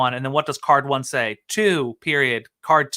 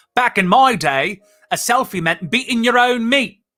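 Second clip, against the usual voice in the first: put-on Australian accent, pitched up; 8 semitones higher than usual. Reading a party game card aloud: australian accent. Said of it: "Here's my Australian".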